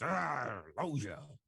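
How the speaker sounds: stock all-purpose put-on old man character voice. Showing what every old man voice sounds like: put-on old man voice. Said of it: "Every old man voice I do is just".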